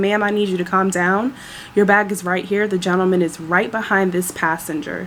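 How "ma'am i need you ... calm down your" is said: plain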